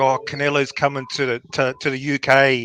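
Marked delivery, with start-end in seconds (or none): none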